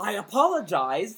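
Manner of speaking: loud, forceful, insistent, emphatic delivery. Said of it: "he said it in a very, like, forceful way".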